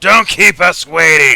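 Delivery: curt, blunt, brusque man's voice, very loud. Speaker repeats a game character's line in a brusque man voice. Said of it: "He says it in that brusque man voice".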